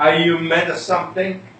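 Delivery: normal talking voice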